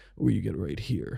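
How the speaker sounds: put-on soft, rough, creaky rasp from the throat. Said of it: "the fuckboy rasp".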